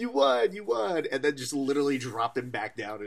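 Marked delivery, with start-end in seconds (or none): 0.0-1.1 play-acted very high, drawn-out, celebratory cheer. Retelling how teammates lift the winner after a fight: imitating celebrating teammates. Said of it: "pick them up, like".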